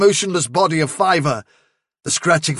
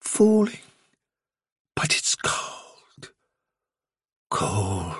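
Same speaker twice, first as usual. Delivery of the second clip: very slow, sleepy, drowsy whisper; 9 semitones lower, 7 dB quieter than usual. A rabbit in a dark burrow speaks as he drifts away: slow and drowsy. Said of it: "His voice grew slow and drowsy".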